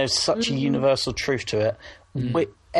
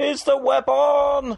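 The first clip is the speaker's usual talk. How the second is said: very shrill put-on silly comedy shout; 13 semitones higher, 4 dB louder than usual. Speaker imitates a boss opening the door to shout, in a shouted comedy voice. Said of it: "in a comedy voice".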